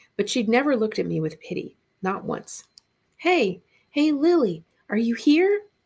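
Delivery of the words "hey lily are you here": very slow, loud, pitched-up whisper-yell. Calling for lily into the center of a library, whisper-yelling. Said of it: "I whisper yelled".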